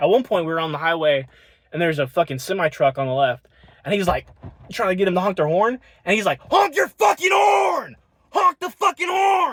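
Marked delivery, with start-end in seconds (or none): 6.4-9.5 play-acted, very high-pitched, drawn-out yelling. Retelling a passenger yelling at a truck driver to honk: imitating someone screaming. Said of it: "screaming at him".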